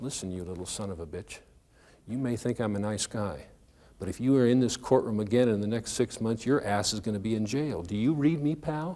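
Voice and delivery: hushed, put-on voice. Retelling a warning given nose to nose with a kid: imitating a voice nobody else could hear. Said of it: "in a voice that nobody else could hear".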